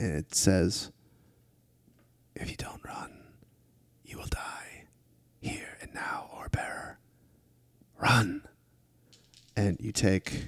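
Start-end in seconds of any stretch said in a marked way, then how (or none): 2.3-8.4 very quiet, hushed, distant-sounding voice. Game master voicing a distant being heard in a player's ear, very quiet distant voice. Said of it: "very, very quietly, the voice of sort of a very distant being".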